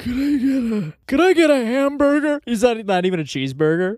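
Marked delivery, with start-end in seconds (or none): 0.0-2.4 put-on high-pitched elderly man's voice. Imitating the oldest guy ordering at McDonald's: imitating a very old man ordering. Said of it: "He's like".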